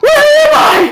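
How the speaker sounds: very high, loud, startled shriek. A player voices their character waking and sitting up fast: Torrin screaming. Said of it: "scream like".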